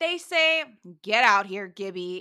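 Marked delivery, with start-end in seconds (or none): 1.0-2.2 acted, grudging, contemptuous, unenthusiastic, annoyed tone. Retelling how the girls call gibby out: imitating an unenthusiastic, annoyed tone. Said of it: "in the most unenthusiastic, annoyed, hate-filled, derogatory".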